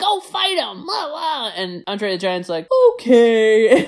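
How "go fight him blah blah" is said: high, loud screaming. Retelling a fight scene where the other guy screams at Andre the Giant; retelling a scream. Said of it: "the other guy's screaming at him like".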